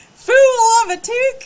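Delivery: put-on shrill, very loud, high belted Southern accent. Trying wacky character voices on request, Southern-accent Gandalf voice. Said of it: "Archer said Southern Gandalf".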